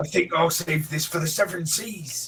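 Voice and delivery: put-on pirate character voice. A character who has just turned into a pirate speaks, in a pirate voice. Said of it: "I've turned into a pirate now".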